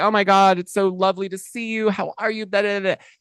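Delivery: high, sugary, gushing fake delight and friendliness. Retelling someone's greeting with a big hug: imitating fake gushing friendliness. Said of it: "is pretending like".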